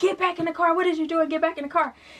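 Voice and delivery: high yelling voice. Retelling him calling her back to the car, imitating him yelling. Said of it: "he was yelling at me, like".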